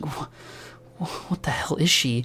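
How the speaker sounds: muttered under breath. Voicing Raven, eyes widened, looking at Glade: muttered under her breath. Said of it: "you hear under her breath".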